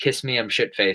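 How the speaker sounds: ordinary talk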